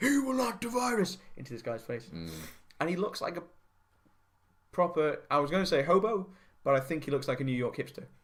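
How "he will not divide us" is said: very high, acted-out shouting. Retelling a man yelling into another guy's face, imitating someone yelling. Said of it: "But yelling".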